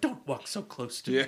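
creeped-out, uneasy, weirded-out dismissive tone. Retelling a movie scene where she is followed: imitating someone weirded out. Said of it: "all fucking weirded out by him".

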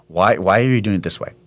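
ordinary talk

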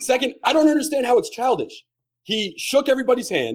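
worked-up, heated rant. Defending a player's conduct with his silver medal, worked up. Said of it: "I'm just worked up about it".

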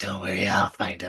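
barely-there, very soft half-whisper. Retelling a movie scene where he half-whispers in her ear: imitating a half-whisper. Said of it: "whispering in her ear".

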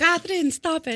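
put-on scolding Greek grandmother voice. A speaker impersonates their Greek grandmother scolding someone: imitating Greek grandmother. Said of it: "That's like my grandmother. She's Greek".

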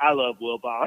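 mock drunken man speech. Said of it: "he's so drunk".

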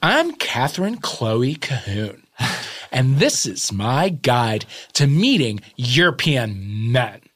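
put-on slow, weirdly positive young woman presenter voice. Imitating a YouTuber's video intro: imitating Catherine Chloe Cahoon, slow and positive. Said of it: "she talks very slowly".

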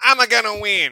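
shrill, very loud character voice. Asked to do it, doing a Waluigi impression. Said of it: "Should I do a Waluigi impression?".

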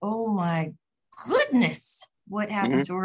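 put-on sweet, wide-eyed, girlish little-girl voice. Recalling reading the newspaper articles about what happened, in Shirley Temple voice. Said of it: "in my best Shirley Temple voice".

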